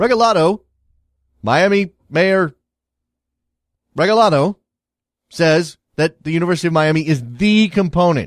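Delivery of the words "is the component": the word "the" strongly stressed. Restating the mayor's claim about the university, strong stress on the. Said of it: "Stress on the".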